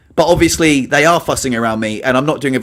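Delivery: ordinary delivery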